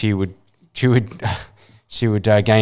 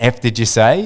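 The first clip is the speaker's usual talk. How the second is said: put-on heated, angry voice. Retelling what was said back to two strangers: imitating own angry voice. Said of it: "in an angry voice".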